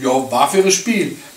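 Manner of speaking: ordinary talk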